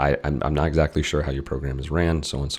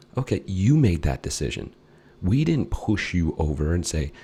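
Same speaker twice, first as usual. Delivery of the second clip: ordinary talk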